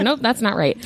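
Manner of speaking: plain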